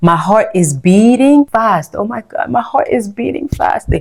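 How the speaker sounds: English in a put-on American accent. Teacher showing French speakers how to say emergency phrases in English, American accent. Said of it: "with the American accent".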